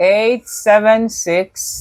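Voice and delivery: slow, slowed-down delivery. Repeating a phone number slower for a listener, saying the number slowly. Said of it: "say it slower".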